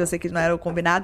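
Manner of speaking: fast, rushed delivery.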